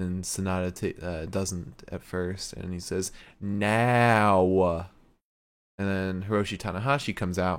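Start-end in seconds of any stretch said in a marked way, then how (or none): 3.4-4.9 put-on British accent in a wrestler style. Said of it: "This is the most spot-on impression you've ever done".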